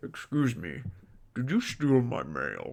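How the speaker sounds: low crocodile character voice. Acting a scene asking a bunny if he stole the mail: Chris the Crocodile voice. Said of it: "I'm gonna play Chris the Crocodile".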